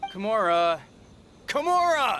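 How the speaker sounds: shouting at full voice. Calling after someone who doesn't answer when it's time to go home, yelling their name. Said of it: "What's with the yelling?".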